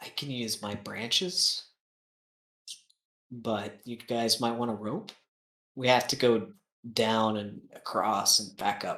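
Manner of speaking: very quiet. A player voicing Xavier in a game run by the DM, speaking very quietly. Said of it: "says very quietly".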